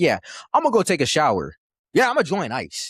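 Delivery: cold, offhand, unbothered tone, sing-song. Retelling what another guy said, imitating cold nonchalance. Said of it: "the nonchalantness in which he was just like".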